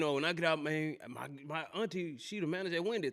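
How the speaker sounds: ordinary talk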